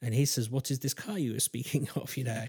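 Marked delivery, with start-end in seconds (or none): 0.5-2.2 soft, put-on French accent. Retelling what a man asked in a story, with a put-on French accent. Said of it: "I don't know why I went into French".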